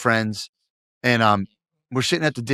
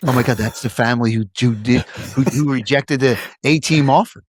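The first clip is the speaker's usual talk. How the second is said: whispered words. Retelling what people at the Little League said: imitating people whispering. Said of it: "people would be whispering like".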